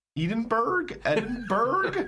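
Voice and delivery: Edinburgh, hard "burg" ending. Showing how Americans say Edinburgh: American 'Edinburgh' with hard 'burg'. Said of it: "you know as American you only go. ... It's definitely a burg".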